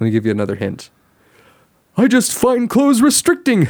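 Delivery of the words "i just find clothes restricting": very high-pitched, loud cartoon character voice. Voicing a line for the other player to guess: Tigger voice. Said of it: "hoping that my Tigger voice would be strong enough".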